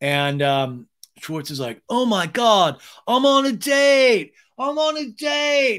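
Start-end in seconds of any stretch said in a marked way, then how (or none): 1.9-5.8 put-on very high, rising, excited shout, date drawn out. Retelling a reality show date scene: imitating someone shouting. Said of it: "He shouts it out".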